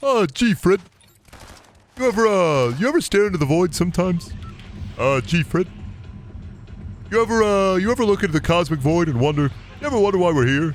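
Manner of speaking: high, dopey cartoon voice with hemming and hawing. Comparing how two cartoon characters sound, doing the second one: Barney Rubble voice. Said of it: "Barney's more of a".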